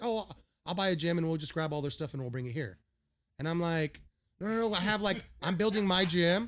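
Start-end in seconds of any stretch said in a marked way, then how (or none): 0.0-2.8 put-on nonchalance, much faster. Retelling what a billionaire said to them, imitating his nonchalant tone. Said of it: "he said it so nonchalant".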